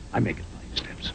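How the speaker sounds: soft, hushed whisper.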